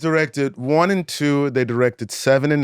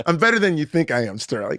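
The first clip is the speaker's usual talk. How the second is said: mock sarcastic, snarky and unbothered cool. Retelling a friend's reply to trash talk: imitating Dan, snarky cool. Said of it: "he gets so sort of, like, snarky cool about it".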